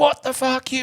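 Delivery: very high, furious, screaming rage. Retelling how the rider came in to the stop: imitating the rider shouting. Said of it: "shouting and screaming like a bitch".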